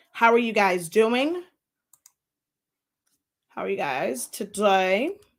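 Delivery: voice not fully recovered. A teacher greets the class while still recovering from being sick, voice not fully recovered. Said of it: "my voice is still not one hundred percent back".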